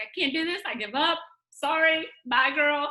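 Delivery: words forced out through tears, crying voice. Retelling a voice memo to a friend, imitating herself crying. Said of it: "crying. I'm like".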